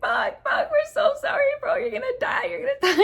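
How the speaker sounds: very high, tearful, panicky sobbing. Speaker retells apologizing to a friend they could not untie, acting out panicked low-key crying. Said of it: "we start like low-key crying".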